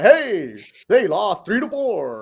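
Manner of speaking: exaggerated anchorman voice, high and swooping. Mocking how people talk on the air, in an over-the-top anchorman voice. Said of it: "you come over the top like anchorman, broadcaster man".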